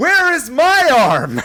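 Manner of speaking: put-on yelling. Retelling a one-armed baker's movie monologue: imitating someone yelling. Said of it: "he's yelling at Cher and he's like".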